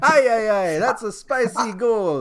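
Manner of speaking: high, slow, mock Italian accent. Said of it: "that's the Italian".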